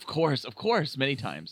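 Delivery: swooping, faux-sincere sarcastic voice. Answering whether the link has been clicked: sarcasm voice. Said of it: "You're using your sarcasm voice".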